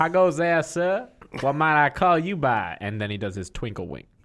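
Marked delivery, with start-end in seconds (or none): 0.0-2.8 drawl, higher, louder, slower. Speaking in character and addressing a man, in a drawl. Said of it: "pantacola collar drawl".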